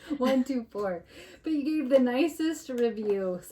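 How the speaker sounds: talking through laughter, words breaking into giggles. Host about to read a listener's kind review, giggling. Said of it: "so I'm sorry I'm giggling".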